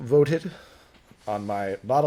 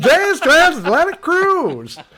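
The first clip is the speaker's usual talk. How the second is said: put-on commercial voice, higher and louder; 14 semitones higher, 11 dB louder than usual. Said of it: "Sounds like a commercial".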